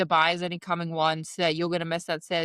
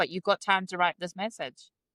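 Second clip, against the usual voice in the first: ordinary talk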